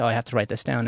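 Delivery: ordinary delivery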